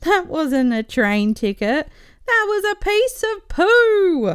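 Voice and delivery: high laughing voice, "poo" drawn out. A passenger replies to the train guy: laughing hard. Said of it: "collapsed in a fit of laughter".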